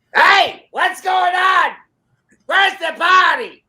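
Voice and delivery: put-on booming, loud Brooklyn accent, high-pitched. Describing a little guy walking into a place, doing his big Brooklyn voice. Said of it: "you get this big Brooklyn voice out of this little little guy".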